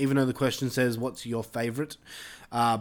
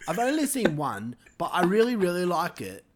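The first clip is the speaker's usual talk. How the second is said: amateurish put-on British accent, sing-song; 4 semitones higher than usual. Rereading a viewer's comment after being asked to: put-on british accent. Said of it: "You gotta do it British".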